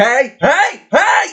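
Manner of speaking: very high-pitched barmaid holler, shouted. Voicing a barmaid who rushes off to stop two people fighting: barmaid shouting to break up a fight. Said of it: "As she rushes off to, um, stop two people from fighting".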